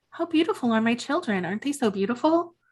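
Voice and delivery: sweet, sugary voice with a creepy edge. Retelling a fight, quoting Martha after she pushed someone down: imitating Martha, mock-sweet and creepy. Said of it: "smiling sweetly and creepily saying like".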